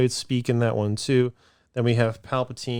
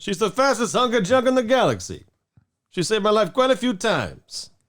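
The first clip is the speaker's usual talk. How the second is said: casual, suave put-on voice, higher; 10 semitones higher, 3 dB louder than usual. Joining in on the impression of Lando: casual Lando voice. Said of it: "he kinda does this sort of casual".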